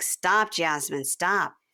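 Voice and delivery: plain, dismissive, brushing-off tone. Retelling how he answered her: imitating him telling her to stop. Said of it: "and he's like".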